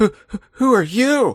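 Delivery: frightened, stuttering voice. Acting out trailer characters meeting a ghost: acting scared. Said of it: "and they're scared".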